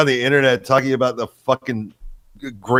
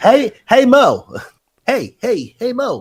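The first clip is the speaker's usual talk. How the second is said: pitched way up, with a swinging rhythm; 10 semitones higher, 4 dB louder than usual. Mock how a man sounds to you, doing a Larry from the Three Stooges voice. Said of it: "sounds like fucking Larry from the Three Stooges".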